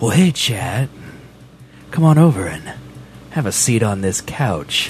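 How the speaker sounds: seductive, seducing chat voice. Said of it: "my seducing chat voice".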